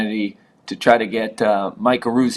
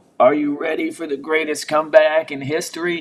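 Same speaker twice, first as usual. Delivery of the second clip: mock drunk yelling, higher pitched; 5 semitones higher than usual. Retelling a drunk guy behind them in empty stands, imitating a drunk guy yelling. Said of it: "he just started to yell out".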